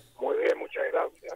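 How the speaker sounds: voice almost gone, hoarse, whispered and breathy. A guest joining by phone answers the host's greeting: hoarse, nearly lost voice. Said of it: "¿Se te desapareció la voz?".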